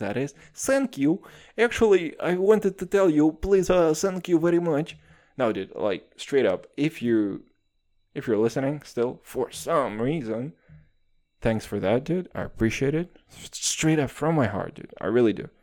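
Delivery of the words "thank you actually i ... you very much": stronger, laid-on, put-on Russian accent, pitched up. Thanking a podcast listener, redoing the thanks in a Russian accent. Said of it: "more of a Russian accent".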